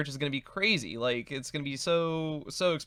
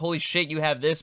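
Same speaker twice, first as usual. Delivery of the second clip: normal talking voice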